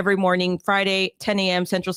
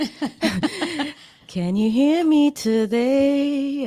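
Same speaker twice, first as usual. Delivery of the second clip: weird, strange-sounding, high, slow voice. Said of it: "Why did I sound like that?".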